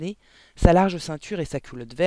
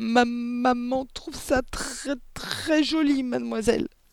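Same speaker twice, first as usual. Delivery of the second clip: high, slow, trembling stammer; 9 semitones higher than usual. Reading a story, a child answers a woman bawling at her; stammering, trembling. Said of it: "bégaya Amanda, tremblant".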